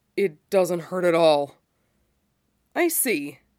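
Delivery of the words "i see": unhurried, slow, lazy, stretched-out drawl. Narrator reading Matt's reply, drawled. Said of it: "Matt drawled".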